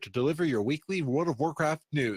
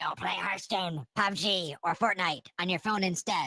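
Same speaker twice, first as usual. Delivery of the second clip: put-on goblin voice; 4 semitones higher than usual. Show host quoting what Gallowix said, in a Gallowix goblin voice. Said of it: "That's my goblin impression".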